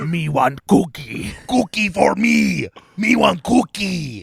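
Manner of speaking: drawn-out delivery, rough and creaky. Asked to do their best Cookie Monster impression: Cookie Monster voice. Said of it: "do your best Cookie Monster impression".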